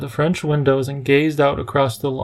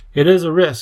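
ordinary delivery, nothing marked

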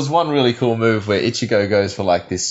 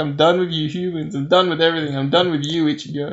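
mock tearful, weepy crying voice, pitched up; 6 semitones higher than usual. Retelling a scene where Rukia is all crying and weepy: imitating Rukia crying and weepy. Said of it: "she's all crying and weepy".

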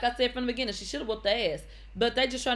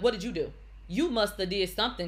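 mock accusatory tone; 2 semitones lower than usual. Retelling how people questioned her from the start: mimicking an accusatory tone. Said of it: "It was very accusatory".

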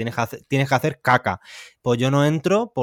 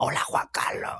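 whispered, hushed, throaty, guttural little voice. Recalling how his brother talked to him in bed as a child, imitating Oscar's guttural voice. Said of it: "Como gutural".

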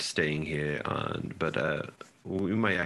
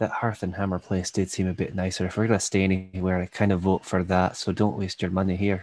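whispering, faster; 3 semitones higher, 5 dB louder than usual. Playing a character leaning over to the cleric, whispering. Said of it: "just like whispering to the cleric".

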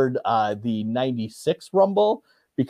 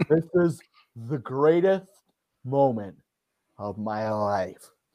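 slow, tearful, emotional wrestling-promo delivery, drawn out; 2 semitones lower, 6 dB quieter than usual. Quoting a wrestler's promo after the Rumble: Ric Flair impression. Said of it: "That was a pretty good Flair".

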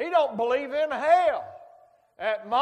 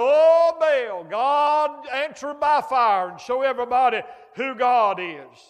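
put-on desperate pleading cry, loud and drawn out; 5 dB louder than usual. Retelling how the prophets of baal cried to their god: imitating desperate crying out. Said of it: "they're crying".

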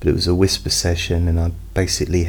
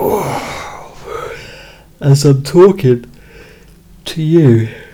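high, very slow, drawn-out speech mid-yawn; 8 semitones higher, 5 dB louder than usual. Speaking to listeners with eyes closed, yawning while talking. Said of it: "and yawning, yawning, talking, yawning".

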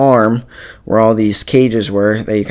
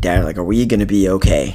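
put-on, really scared, frightened voice; 3 semitones lower, 3 dB quieter than usual. Recalling a first time on the ride beside dad, retelling being really scared. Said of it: "And I was really scared".

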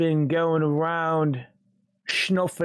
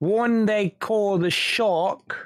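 put-on British gangster accent; 4 semitones higher than usual. Speaking in character during a role-played scene, in a British gangster accent. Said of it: "I'm sounding like a British gangster".

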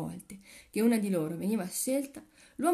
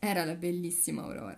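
plain reading voice

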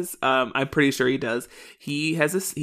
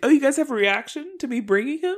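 put-on oblivious voice, higher; 12 semitones higher than usual. Retelling Terry's reaction to her friends: imitating Terry. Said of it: "she's like".

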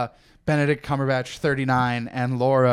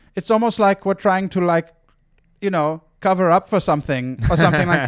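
put-on German accent, higher pitch; 5 semitones higher, 4 dB louder than usual. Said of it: "a German accent".

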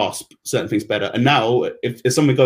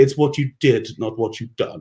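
put-on posh upper-class English woman's accent. Retelling a woman at the office correcting the speaker's grammar, imitating a posh English woman. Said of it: "you think she was the Queen's daughter, like the way she spoke".

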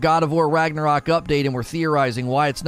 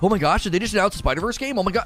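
imitated excited outburst; 3 semitones higher than usual. Retelling a worked-up reaction to a possible game announcement: imitating an excited reaction. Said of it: "I just got Lono all wound up".

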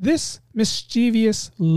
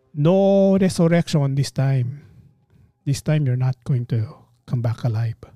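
English spoken with a Filipino accent; 4 semitones lower than usual. Speaker imagining a superhero's line said by a filipino guy; filipino accent. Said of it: "With a Filipino accent".

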